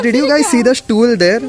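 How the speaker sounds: usual speaking voice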